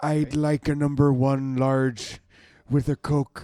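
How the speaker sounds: slow, loud, deliberate delivery. Imitating Werner Herzog ordering at McDonald's: Werner Herzog voice. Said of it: "I could listen to him order from McDonald's".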